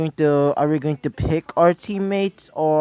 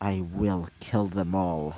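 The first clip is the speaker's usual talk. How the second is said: muttered under the breath, lower and quieter; 9 semitones lower, 8 dB quieter than usual. Reading a story where a character makes a fist, muttering under his breath. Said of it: "under his breath".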